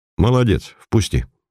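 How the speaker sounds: ordinary delivery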